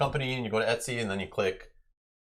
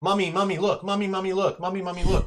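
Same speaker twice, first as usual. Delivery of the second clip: mock little kid yelling, very high pitched; 11 semitones higher, 5 dB louder than usual. Describing a child interrupting a parent talking with a friend, imitating a yelling little kid. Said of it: "constantly yelling over you".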